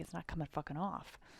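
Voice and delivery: acted panicking, flustered, frantic exclamation. Retelling pushing the button that would not work: imitating own past panic. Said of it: "but I was panicking".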